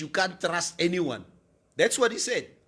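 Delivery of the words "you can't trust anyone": usual speaking voice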